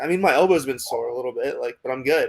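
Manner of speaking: ordinary talk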